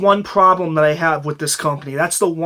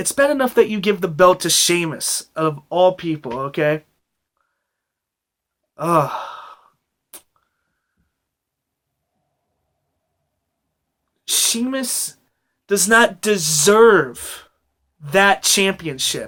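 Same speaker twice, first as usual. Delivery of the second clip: furious, exasperated, really angry venting rant. Venting at the listener about a decision they made, angry. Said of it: "I'm really, really angry".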